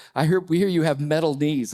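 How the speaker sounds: ordinary delivery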